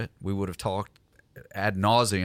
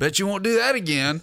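put-on southern comedian voice, higher and louder; 11 semitones higher, 5 dB louder than usual. Retelling a comedian's bit from an old tape: Jeff Foxworthy impression. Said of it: "That's my best Jeff Foxworthy".

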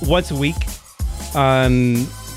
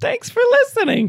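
exaggerated animated-film tone, much higher. Closing out to the listeners after a request to redo it, Disney-level thank-you. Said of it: "That is a Disney-level thank you".

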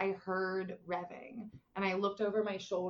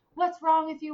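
raised, pitched-up screaming yell; 8 semitones higher, 8 dB louder than usual. Retelling screaming at a man while half conscious, the speaker imitates screaming. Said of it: "I'm screaming at this guy".

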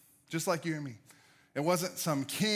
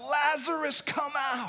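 impassioned crying out, very high and passionate; 10 semitones higher, 3 dB louder than usual. Telling how he called his friend Lazarus from the tomb, retelling a passionate cry. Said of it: "cries out".

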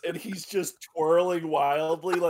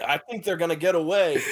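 plain

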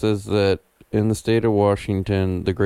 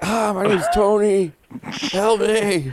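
very high, desperate yelling scream; 13 semitones higher than usual. Describing goat yelling videos, imitating a man trapped inside yelling. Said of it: "It sounds like there's a guy trapped in there like".

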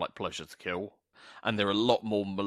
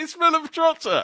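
starstruck excitement, higher and louder; 11 dB louder than usual. Retelling being photographed drunk with a band member: imitating starstruck self. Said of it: "incredibly starstruck".

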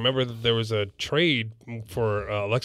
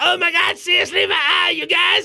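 bad cartoon voice, pitched way up, loud; 6 dB louder than usual. Speaker retells their own reaction to a moment, in a bad Cartman impression. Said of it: "like a bad Cartman impression".

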